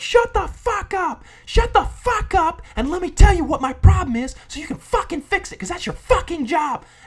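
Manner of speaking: acted, very loud, high, shrill, furious raging scream. Retelling how he screamed at a woman who told him to stop cursing: retelling his furious screaming. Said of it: "I'm just screaming like that".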